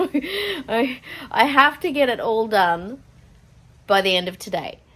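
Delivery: slow, nervous laughing through the words. Talking about the packing still left to finish today, laughing nervously. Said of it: "[laughing nervously]".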